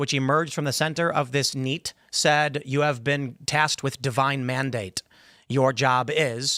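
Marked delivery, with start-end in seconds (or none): none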